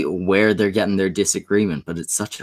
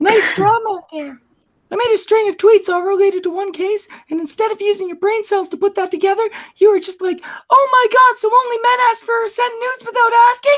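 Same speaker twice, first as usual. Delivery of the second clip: very high, squeaky borrowed voice; 4 dB louder than usual. Doing an impression of another speaker during an argument over tweets: imitating another speaker's voice. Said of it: "I'm gonna try and do your voice".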